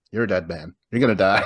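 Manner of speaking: usual speaking voice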